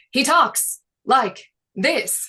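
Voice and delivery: slow, halting, with long pauses between the words. Giving feedback on stutters in a voice reel: William Shatner impression. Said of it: "puts in a lot of pauses".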